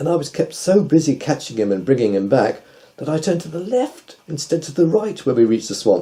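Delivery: ordinary delivery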